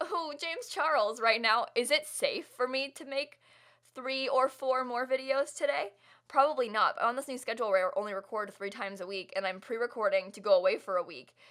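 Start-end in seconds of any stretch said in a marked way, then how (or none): 0.0-1.2 put-on giddy, giggly gushing, higher pitched. Showing how giddy and giggly she is right now: mock giddy and giggly. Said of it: "giddy and giggly and like".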